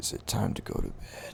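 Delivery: very weak, feeble, breathy near-whispered voice. A startled man answering a stranger's touch, very weak voice. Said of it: "He has a very weak voice to him".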